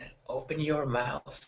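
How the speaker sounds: close, hushed, secretive half-whisper. Speaking in character, leaning close to someone's ear: half-whispering in his ear. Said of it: "whisper him".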